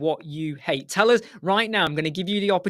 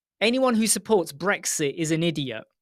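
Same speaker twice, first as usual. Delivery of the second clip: plain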